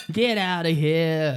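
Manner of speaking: loud, really bad put-on New York accent. Asked to revisit someone's really bad New York accent, bad New York accent. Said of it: "can we revisit that accent for a second?".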